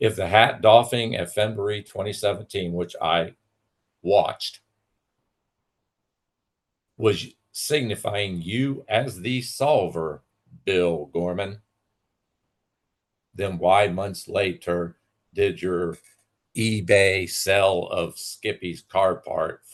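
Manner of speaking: very slow, condescending, spelled-out delivery. Challenging the man who sold the car part on ebay, saying it real slow. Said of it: "Let me say it real slow for you".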